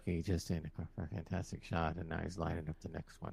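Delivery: very quiet, low, creaky hushed golf commentator murmur. Arguing with friends about how golf commentators talk, golf commentator voice. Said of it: "They always talk like that".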